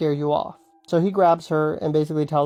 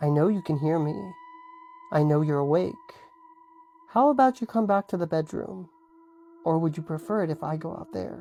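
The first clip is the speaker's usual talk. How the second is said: rough, gravel-edged, gravelly calling voice; 5 dB quieter than usual. Retelling the woman calling from the bedroom: imitating a gravelly tone. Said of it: "In the same voice".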